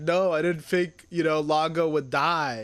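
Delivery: acted sobbing, crying, tearful delivery. Retelling an episode scene where Jeeb answers: imitating Jeeb crying. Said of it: "Jeeb is just, like, crying".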